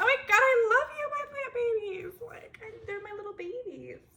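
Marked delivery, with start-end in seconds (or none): 0.0-2.1 very loud, high, thrilled gushing outburst, acted out. Retelling how they greet their plants each morning: imitating own excited greeting. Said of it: "I get excited to say it".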